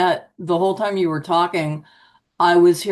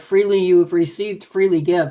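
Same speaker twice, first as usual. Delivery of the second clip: mock very stern, reproving tone. Retelling what a pastor's wife said about selling books: imitating a stern remark. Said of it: "very sternly said".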